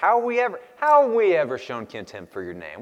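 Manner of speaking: acted, mock-sarcastic tone. Acting out how they ask their question, mock-sarcastic question. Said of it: "it's that sarcastic way I feel like it comes out".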